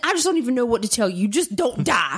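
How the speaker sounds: put-on curt, snappy delivery. Repeating back to the listener what they said: imitating a snappy reply. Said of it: "you said it all snappy".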